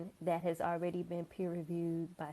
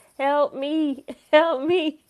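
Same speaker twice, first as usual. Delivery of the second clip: very high, loud, slow, drawn-out wail; 9 semitones higher, 17 dB louder than usual. Showing another way the plea for help has been said: Kevin Hart voice. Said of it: "in my Kevin Hart voice".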